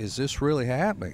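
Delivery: ordinary talk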